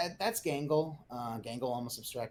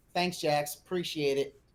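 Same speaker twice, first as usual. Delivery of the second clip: loud, heavy, put-on very sarcastic delivery; 3 semitones higher, 5 dB louder than usual. Recapping a scene where one character thanks another: retelling a sarcastic thanks. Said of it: "Very sarcastic".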